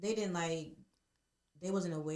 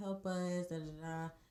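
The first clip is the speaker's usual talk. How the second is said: usual speaking voice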